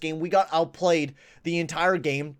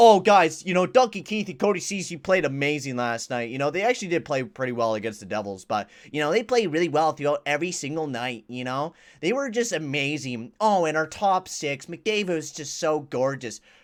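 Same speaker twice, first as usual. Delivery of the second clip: plain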